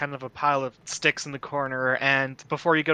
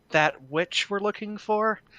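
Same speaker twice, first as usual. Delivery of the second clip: low-key, confiding, confidential tone, slightly pitched up; 6 semitones higher than usual. A character knocks on a door and asks about a witch, lowering the voice a bit. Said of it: "lower my voice a bit".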